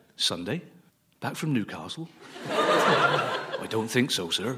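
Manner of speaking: put-on Cornish accent. Retelling trying to book a train to Newcastle, quoting the reply in a Cornish accent. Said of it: "I don't know why they spoke in a Cornish accent".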